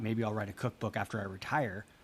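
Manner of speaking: plain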